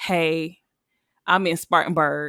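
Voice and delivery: imitated trembling voice. Retelling a late-night call asking for a ride: imitating own trembling voice. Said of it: "my voice is trembling and everything".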